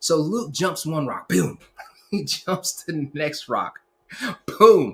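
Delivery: talking through laughter. Telling a story about luke jumping from rock to rock, laughing while talking. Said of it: "sorry, I'm laughing".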